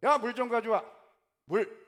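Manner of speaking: very loud, bossy, domineering delivery. Showing how one orders those below to bring water, mock-bossy commanding tone. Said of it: "이런 어투로".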